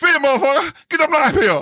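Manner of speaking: put-on very high-pitched yelling. Retelling how Willie yelled at the junior seamen; imitating Willie. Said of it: "I'll try to imitate him".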